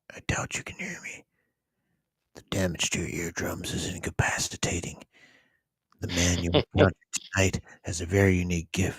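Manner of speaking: hushed voice. Reading a villain's lines aloud from a panel: whispering. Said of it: "He's whispering".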